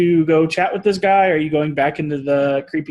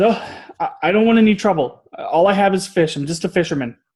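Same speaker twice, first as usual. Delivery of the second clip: startled, stammering fisherman voice, caught off guard; 2 semitones higher than usual. Voicing a fisherman startled by approaching players: startled fisherman voice. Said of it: "you still startle him a little bit, and he says".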